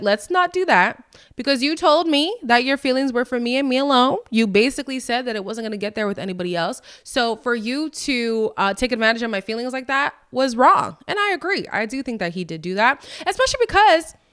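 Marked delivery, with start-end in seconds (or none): none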